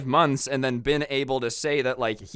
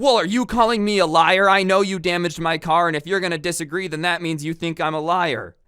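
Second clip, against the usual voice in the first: put-on argumentative tone, higher and louder; 4 semitones higher, 5 dB louder than usual. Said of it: "she just starts arguing with him".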